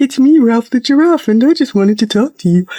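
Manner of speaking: silly little puppet voice. Distracting a child getting a shot with a stuffed animal, silly Ralph the giraffe voice. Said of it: "giving it a silly little voice".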